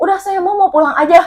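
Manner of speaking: very high, crying, tearful yell. Retelling a worker's words while he cried and shouted: imitating someone crying and shouting. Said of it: "Nangis dia sambil teriak-teriak".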